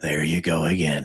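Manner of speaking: slow, botched drawl, sounding congested. Trying an impression after joking with the other speaker: Ronald Reagan impression. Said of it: "I can't do a Ronald Reagan".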